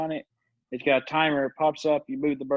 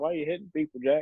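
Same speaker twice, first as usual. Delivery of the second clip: put-on indifferent, uninterested tone. Retelling the manager's reply after hitting a man: imitating Bert sounding indifferent. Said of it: "he just sounded like he doesn't give a shit".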